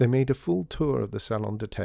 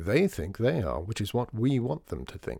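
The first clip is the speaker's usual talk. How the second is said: plain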